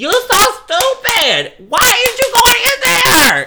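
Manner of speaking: very high, very loud, shrill screaming. Describing herself at the front of a theater during slasher films: retelling yelling at the screen. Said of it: "I'm the girl in the front of the theater going".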